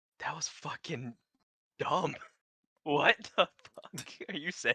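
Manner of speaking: loud stage whisper, barely above audible. Trying to get his voice heard without revealing himself, slightly above audible whisper. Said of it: "Like slightly above audible whisper".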